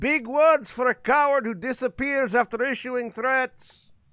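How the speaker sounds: calling out, voice projected upward. A player's character calls up after a vanished dragon, calling up to the clouds. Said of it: "I call up to the clouds".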